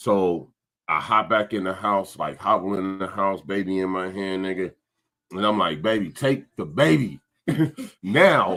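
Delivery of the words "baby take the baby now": mock hollering, raised voice, urgent. Speaker retells hobbling into the house with something stuck in his foot, retelling his hollering. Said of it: "why you hollering at me?".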